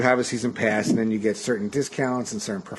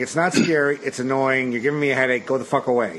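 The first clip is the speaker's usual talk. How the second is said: normal talking voice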